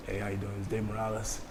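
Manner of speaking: very deep, very quiet, soft voice. Retelling Dave Morales phoning about next week's party, deep-voiced Dave Morales impression. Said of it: "he got that deep voice".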